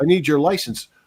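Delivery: mock shouting. Retelling asking a driver through a car window: imitating shouting through a window. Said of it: "you're shouting through a window".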